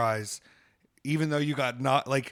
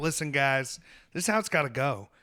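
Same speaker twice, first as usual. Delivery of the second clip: put-on Tennessee-accented voice. Retelling what the mediator on a call said, imitating a Tennessee accent. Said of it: "Tennessee accent too".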